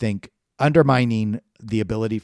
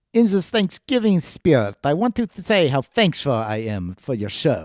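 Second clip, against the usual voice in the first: high, odd, unplaceable put-on accent; 5 semitones higher than usual. Reading a listener's email aloud to Tony on the show; unidentified put-on accent. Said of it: "I don't know what accent this is".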